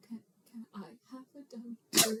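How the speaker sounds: very quiet, hushed, soft voice. Retelling a scene where a daughter asks her dad: imitating a very quiet request. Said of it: "very quietly says".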